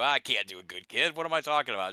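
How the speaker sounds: plain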